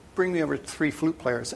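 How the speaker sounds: plain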